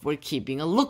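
usual speaking voice

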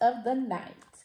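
plain

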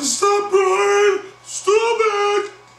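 shrill, very high, drawn-out pleading shriek. Speaker retells a street fight, acting out a woman screaming at the fighter. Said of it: "Sophia's screaming".

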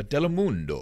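telemundo said forcefully, with power. Saying a Spanish-language channel name properly: Telemundo with power. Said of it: "you got to say that with some power".

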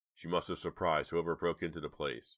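plain

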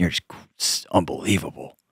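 low, soft, disgusted voice. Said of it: "he looks at you across the room like".

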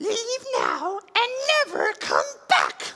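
squeaky, very high put-on voice with swooping pitch. Giving a character's reply, attempting a Sméagol voice. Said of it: "I might try to do it in his voice".

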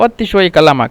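normal talking voice

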